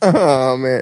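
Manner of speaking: speech through laughter. Reacting to a remark another speaker just quoted: laughing while talking. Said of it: "If I can stop laughing long enough to talk".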